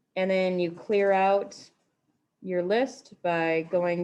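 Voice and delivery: slow, spaced-out dictation.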